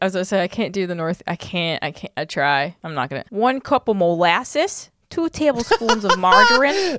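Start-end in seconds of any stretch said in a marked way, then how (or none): 3.3-7.0 Midwest accent, higher, slower. Trying out regional accents in a conversation, midwest accent. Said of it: "That's a good Midwest".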